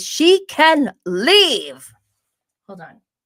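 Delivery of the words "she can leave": showy, high, loud swooping character voice. Answering a viewer comment about Emily: Meredith Marks voice. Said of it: "In my best Meredith Meredith Marks voice".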